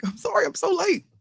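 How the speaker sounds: high, soft, mocking voice.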